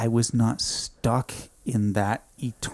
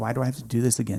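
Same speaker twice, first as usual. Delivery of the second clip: put-on crying, tearful pleading. Retelling pleading with a nurse after waking up, acting out past crying. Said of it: "And I'm crying".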